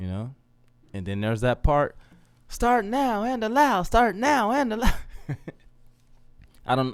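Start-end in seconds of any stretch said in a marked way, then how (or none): 2.5-4.9 voice pushed to a very high pitch. Voicing the other side of the speaker's self, in a higher-pitched voice. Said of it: "I get a higher pitched voice when I do that".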